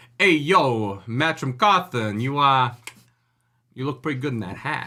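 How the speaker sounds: put-on New Jersey wise-guy accent. Discussing accent choices, the speaker acts out an actor's line: put-on New Jersey Goomba accent. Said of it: "a New Jersey Goomba as the actor".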